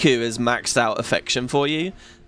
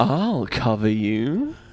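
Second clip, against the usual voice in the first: tender, affectionate, close and intimate delivery; 3 semitones lower than usual. Showing how the voice actress says Rikku's affection line: imitating Rikku's affectionate line. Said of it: "And she says it like this".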